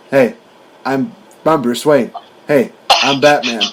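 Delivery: unchanged normal speaking voice throughout. Mocking how the actor playing Batman used the same voice for both roles: George Clooney impression. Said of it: "he's still the same voice".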